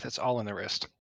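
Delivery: quiet mutter under the breath, aside. Playing a character after a failed throw at the table: muttering under breath. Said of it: "I'd like to mutter under my breath".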